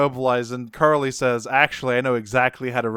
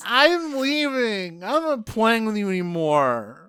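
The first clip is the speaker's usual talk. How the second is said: put-on very high, childish, whiny sulking tantrum; 10 semitones higher than usual. Recapping the scene where Ironhide smashes it, the speaker is imitating Frank Welker's tantrum. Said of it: "really did some remarkable work during these tantrums".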